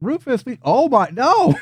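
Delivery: very high, frantic, shrill, swooping, panicked shriek. Voicing pixies who see a bug witch: pixies screaming in panic. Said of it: "they just start to scream and freak the fuck out".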